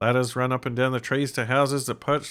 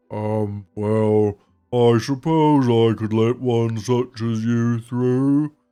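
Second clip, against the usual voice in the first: slow, loud, thoughtful tree character voice; 2 semitones lower, 5 dB louder than usual. After a successful dice roll, the tree answers in a tree character voice. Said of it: "I should probably do a tree voice".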